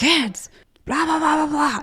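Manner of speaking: acted-out high-pitched, shrill scolding yell. Retelling how Daniel tells the kids off after four requests: imitating Daniel yelling at the kids. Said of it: "he comes Papa Bear mode six thousand".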